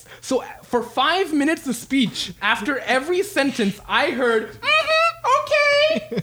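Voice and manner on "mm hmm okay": very high, annoying, tic-like irritating voice. Retelling a job expo, imitating an irritating voice. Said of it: "That's his exact fucking voice".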